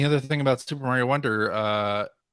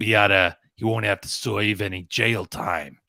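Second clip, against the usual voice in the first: put-on low mobster growl. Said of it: "like a, like a mobster?".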